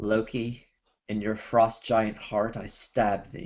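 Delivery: muttering under the breath. A player's character casts a hunter's mark on a frost giant, muttered under breath. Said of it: "under my breath".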